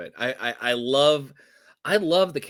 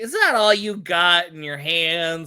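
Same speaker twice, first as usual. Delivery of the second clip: put-on laughing taunt, higher and louder; 5 semitones higher, 5 dB louder than usual. Retelling a captured fighter taunting her captors: imitating Pam laughing while taunting. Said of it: "And she was laughing, like".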